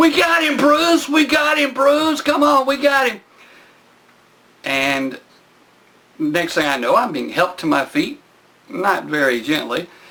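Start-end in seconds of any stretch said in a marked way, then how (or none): 0.0-3.2 mock very high, shrill shouting over each other. Retelling people shouting after pinning someone down: imitating people yelling. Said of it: "the sound of all sorts of people yelling".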